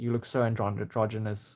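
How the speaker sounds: normal talking voice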